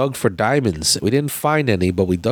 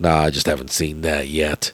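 play-acted, very low, sniffy, dismissive tone; 7 semitones lower than usual. Speaker retells how a guy answered his wife, with a little stank. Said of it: "he said it with a little stank".

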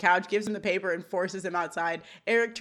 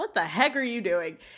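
usual speaking voice

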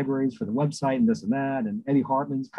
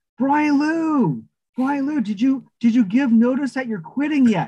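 mock very high, loud holler; 12 semitones higher, 5 dB louder than usual. Retelling showing up at a friend's office: retelling own yell down a hallway. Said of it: "And I yelled down the hallway".

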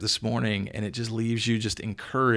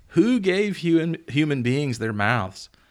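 usual speaking voice

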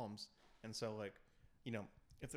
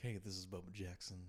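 smooth, cool, easy late-night DJ voice; 4 semitones lower than usual. Retelling a late-night radio host's intro: imitating Bubba Jackson's cool voice. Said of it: "he's got that cool voice".

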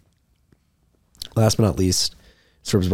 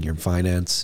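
usual speaking voice

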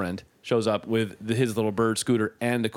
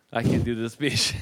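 plain

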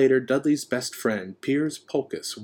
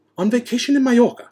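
very high, loud, snapped, sharp delivery; 13 semitones higher, 8 dB louder than usual. Aunt Petunia answers a question about her friend Yvonne, snapping. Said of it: "snapped Aunt Petunia".

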